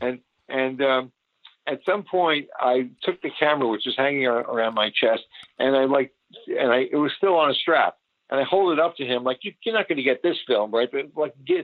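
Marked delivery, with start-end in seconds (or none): 9.4-10.9 baiting, taunting, teasing tone. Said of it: "baiting him with it".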